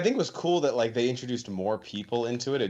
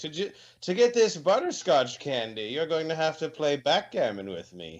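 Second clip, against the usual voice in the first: put-on elderly retiree's old man voice; 4 semitones higher than usual. Mocking how someone sounds, imitating an old man at a retirement home. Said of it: "He sounds like an old man at a retirement home".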